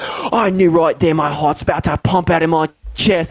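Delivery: put-on Australian accent, accent on. Retelling a husband's story of first seeing his wife: imitating Steve's Australian accent. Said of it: "the idea of the accent perfectly".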